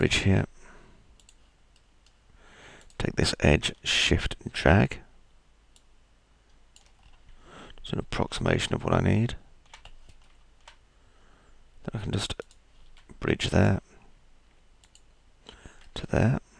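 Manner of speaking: croaky, hoarse voice. Explaining modelling steps with a cold: croaky voice. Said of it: "Must apologise for my croaky voice".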